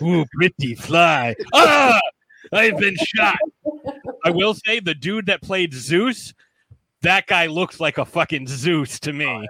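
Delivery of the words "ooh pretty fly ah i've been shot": put-on classic old horror-film monster voice. Recapping a film, acting out Darkseid's lines; Frankenstein's monster voice. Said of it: "like Frankenstein's monster".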